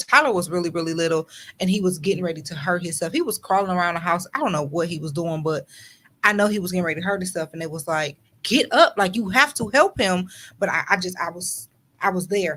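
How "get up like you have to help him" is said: put-on screaming, higher pitch. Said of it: "standing in front of myself screaming".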